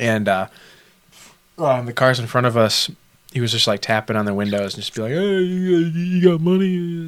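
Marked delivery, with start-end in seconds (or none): 5.1-7.1 mocking put-on voice, much higher and slower. Retelling a homeless guy tapping on car windows for money, mocking him. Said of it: "And I sound like I'm mocking him".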